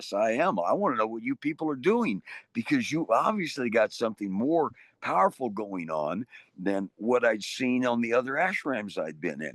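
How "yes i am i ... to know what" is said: usual speaking voice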